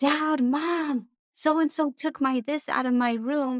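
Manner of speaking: put-on high, drawn-out, yelling child's voice. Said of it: "quit yelling at them".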